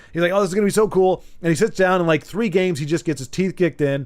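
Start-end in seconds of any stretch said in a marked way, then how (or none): none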